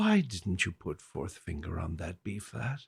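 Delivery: utterly calm, low, soft teacher voice. Quoting the question she would keep asking, imitating her very calm voice. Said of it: "she had the most calm voice".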